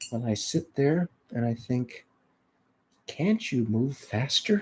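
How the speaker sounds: very soft, hushed, mild musing little voice. Quoting a woman in her sixties describing her road rage, imitating how she talks. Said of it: "kind of talks like this".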